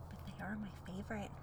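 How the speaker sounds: said quietly. Talking about couples on a podcast, said quietly. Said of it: "And I'm saying that quietly".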